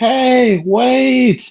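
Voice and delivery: loud, high-pitched scream.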